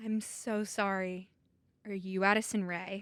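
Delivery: put-on somber tone. Retelling an encounter, the speaker acts out a woman's question: mock-grave, like delivering bad news. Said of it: "Like you're about to deliver like the worst news".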